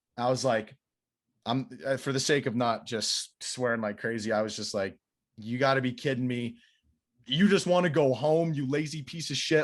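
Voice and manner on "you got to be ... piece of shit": put-on angry outburst, higher pitch. Retelling blowing up at the head coach: retelling blowing up angrily. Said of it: "I kinda blew up on this guy".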